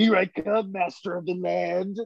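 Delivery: high cartoonish voice. Recounting the train scene, doing an Inosuke impression. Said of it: "That was a pretty good Inosuke".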